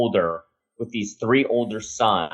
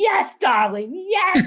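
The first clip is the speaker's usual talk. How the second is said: put-on excited screaming, higher pitch. Retelling Lee Daniels' reaction to an idea: imitating Lee Daniels screaming. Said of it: "starts screaming".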